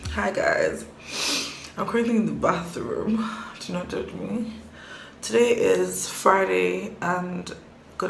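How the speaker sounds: sleepy, husky, just-woke-up morning voice. Greeting vlog viewers from the bathroom, in a husky just-woke-up voice. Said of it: "I sound so husky, I just woke up".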